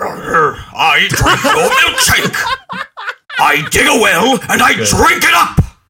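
very high, very loud, shrill, swooping tycoon tirade. Asked to do an impression because you're good at voices: Daniel Plainview impression. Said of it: "Can you do a Daniel Plainview impression?".

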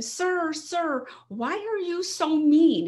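loud, high, drawn-out yell. Retelling how a young woman confronted a man: imitating someone yelling. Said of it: "I'm gonna yell at him".

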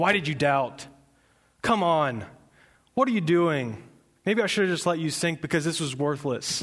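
play-acted, scolding, chiding telling-off voice. Explaining an old misreading of the passage, Jesus scolding Peter. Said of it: "I read it like Jesus was scolding".

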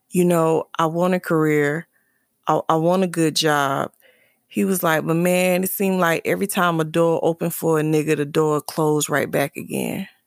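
ordinary talk

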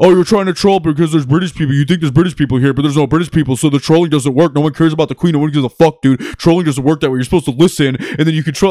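fast, heated, rattled-off nonstop tirade. Retelling how a man in the audience went at him: imitating someone ranting fast at him. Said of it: "this dude just starts going at me like".

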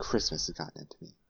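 mock deadly serious delivery. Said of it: "she's deadly serious about it".

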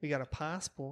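put-on Australian accent. Retrying the joke line, starting with a greeting: put-on australian accent. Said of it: "That was better".

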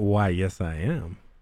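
acted flirty, very slow seductive drawl. Telling a joke, voicing the woman at the food truck: seductive tone. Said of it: "looks at him kinda seductively".

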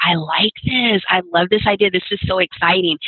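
ordinary talk

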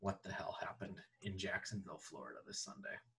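low, hushed, stunned whisper in disbelief.

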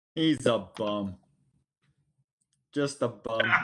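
loud, put-on Minnesotan accent. Talking about an opposing player, in a minnesota accent. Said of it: "even in the Minnesota voice".

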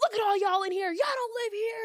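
shrill screaming, very high and at full volume. Speaker retelling a man barging in on a group of visiting kids, imitating him yelling. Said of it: "He just started screaming and yelling at us".

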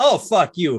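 acted playful, laughing, high-pitched teasing tone. Recalling a MySpace message, the speaker acts out how it was meant: retelling a laughing 'fuck you'. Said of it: "laughing and going".

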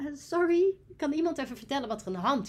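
put-on sweetness. The speaker retells asking through a door gap, retelling saying it sweetly. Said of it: "Maar dan zei ik het heel lief".

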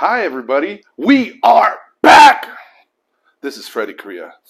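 shouting. Greeting everybody as the podcast comes back: yelling. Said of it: "I'm sorry for yelling".

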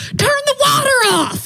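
play-acted, very high, drawn-out screamed delivery. Retelling the flooding toilet, Michelle screams at them: imitating Michelle screaming. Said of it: "she screams at me".

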